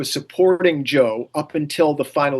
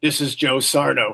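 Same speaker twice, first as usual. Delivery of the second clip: put-on woman's voice, slightly deep. Act out Peggy claiming to be Joe to get cards in his name, imitating Peggy's slightly deep voice. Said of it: "Peggy had a slightly deep voice for a woman".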